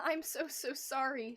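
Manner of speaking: soft, whimpered delivery. A narrator reading a story voices a she-cat's apology, whimpering. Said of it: "she whimpered".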